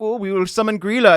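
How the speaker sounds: put-on high-pitched German accent, childlike. Imagining what hungry children would say: mock German accent. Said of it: "why are they German?".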